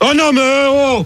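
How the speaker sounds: angry, high-pitched, outraged shouting.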